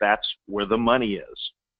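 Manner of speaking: bone-dry, level, flat deadpan, acted. Retelling how Willie Sutton answered a reporter's yelled question on a perp walk, imitating a deadpan reply. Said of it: "in the most deadpan way he could say it".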